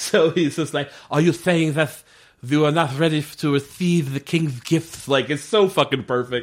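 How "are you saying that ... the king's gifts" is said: full Castilian lisp, every s as th. Recapping a show, the speaker quotes the Spanish king's emissary, full-on Castilian lisp. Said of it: "full on like Castilian lisp".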